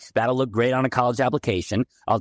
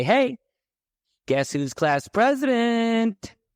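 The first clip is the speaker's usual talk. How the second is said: mock very high, eager, drawn-out child voice; 11 semitones higher than usual. Retelling bursting in on his dad with news: imitating his own excited past self. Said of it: "I walk in all excited".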